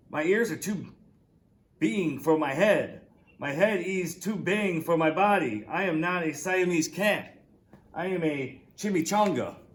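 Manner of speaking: strong Spanish accent attempt. Reading the story aloud, Skippy John Jones speaks in his very best Spanish accent. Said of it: "using his very best Spanish accent".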